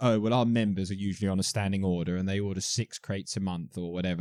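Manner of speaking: normal talking voice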